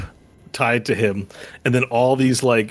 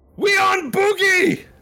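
shrill, very high goblin shout. Voicing a goblin calling out to his people, goblin yelling out. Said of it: "He yells out".

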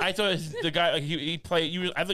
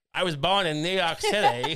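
unconvincing, so-so put-on American accent. Mocking an actor's accent in a movie: imitating Ralph Fiennes's American accent. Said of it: "His accent's like".

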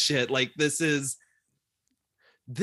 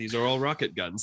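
normal talking voice

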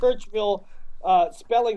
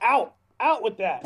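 ordinary talk

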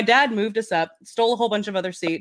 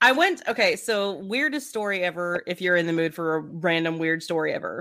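normal talking voice

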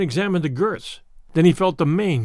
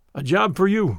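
usual speaking voice

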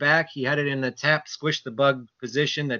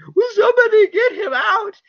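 very loud, very high, tearful crying wail; 8 dB louder than usual. Recalling watching the 1989 NLCS at eight, imitating crying as a kid. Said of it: "I'm just like crying, going".

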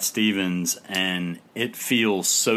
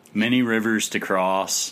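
usual speaking voice

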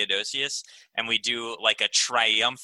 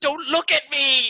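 high, loud tearful yell. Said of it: "I just turn back at them and I yell".

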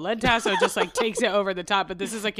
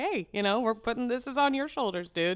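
high, breezy, nonchalant passive-aggressive needling; 5 semitones higher than usual. Acting out a TV coach's words to a player: imitating Ted Lasso, nonchalant passive-aggressive. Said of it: "in his best, um, nonchalant, passive-aggressive way".

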